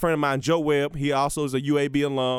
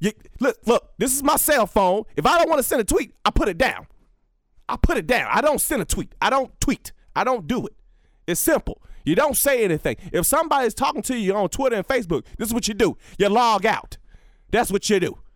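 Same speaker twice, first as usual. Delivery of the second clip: aggressive pitched-up rant, every point hit hard; 7 semitones higher than usual. Imitating how he talks to people: imitating aggressive Herm Edwards. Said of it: "He's just so aggressive when he talks to people".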